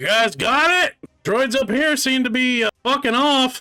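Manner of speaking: very high, piercing shout. A game master voices a familiar figure calling to those below: yelling down into a hatch. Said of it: "yelling down into the hatch".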